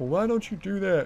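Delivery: put-on high, loud, mocking nagging voice.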